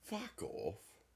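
very soft, hushed whisper, barely voiced. Answering a jab right after both agree to talk quieter: whispering. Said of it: "You whispered that as much as you could".

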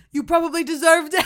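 very loud, high, shouted yell. Quoting their dad yelling back at them from his room, retelling a yell back. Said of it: "he just yells back".

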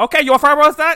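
put-on heavy Chinese accent. Mimicking the person taking a Chinese food order, imitating a heavy Chinese accent. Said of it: "what they sound like".

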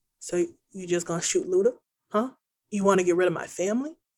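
put-on deadpan tone. Retelling a scene where a man faces a woman pulling a gun, mock-deadpan delivery. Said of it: "in like the most deadpan tone".

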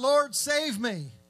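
desperate, pleading man's cry. Retelling a sinking man calling to the Lord: retelling a cry for help. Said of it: "he cries out".

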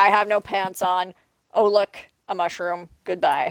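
ordinary talk

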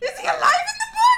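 very high, loud, shocked, gasping voice.

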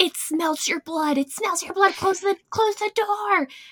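frantic, panicked voice, very high-pitched. Retelling mom's reaction to a coyote in the parking lot, imitating mom losing her mind. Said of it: "she's just like losing her mind".

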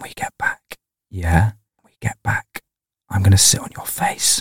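sugary, sweet, soft whisper, very close up. Acting out a woman leaning close to her partner's ear: sweet whisper. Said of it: "whispers so sweetly".

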